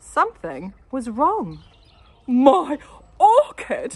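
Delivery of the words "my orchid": very loud, high, roaring bellow. Reading a story, a man finds something wrong with his plant, bellowing. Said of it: "he bellowed".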